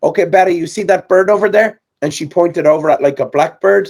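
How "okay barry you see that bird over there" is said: put-on Eastern European accent, higher pitch. Retelling what a woman said to barry, pointing at a bird: put-on eastern european accent. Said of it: "in her Eastern European accent".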